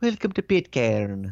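attempted New Zealand accent. Describing YouTube videos about Pitcairn, speaker tries a New Zealand accent. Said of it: "English, New Zealandish accents".

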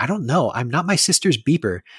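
put-on prickly, very defensive tone. Speaker recounts Quinn being asked where her sister is, mock-defensive Quinn voice. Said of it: "gets super defensive".

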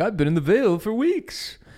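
mocking, sarcastic, high swooping sing-song. Recapping a show, the speaker quotes Littlefinger answering Sansa, imitating Littlefinger being sarcastic. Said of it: "He is sarcastically like".

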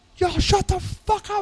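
play-acted screaming, very high-pitched. Recounting time in jail, act out a man who just starts screaming, retelling a man's screaming. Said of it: "He just starts screaming".

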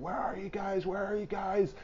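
put-on, very high, frantic screamed shout. Telling a story about a night in a tent, quoting someone arriving outside: retelling someone screaming.

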